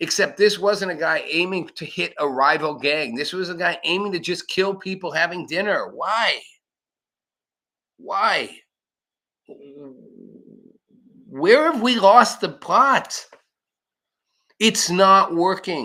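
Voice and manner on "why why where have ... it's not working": angry, frustrated, exasperated. Asking why a shooting happened: angry and frustrated. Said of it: "If I sound angry and frustrated, I am".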